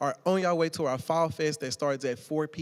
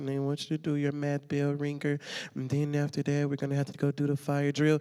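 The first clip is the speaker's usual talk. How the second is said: dull, dreary, droning boring teacher voice; 2 semitones lower than usual. Speaker describes a first-period teacher to youth, imitating a boring teacher. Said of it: "they talk in a boring voice just like this".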